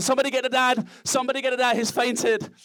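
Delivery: frantic, panicked crowd shouting, high-pitched, from all around. Retelling how everyone shouted after he collapsed; retelling people shouting. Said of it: "everyone's shouting".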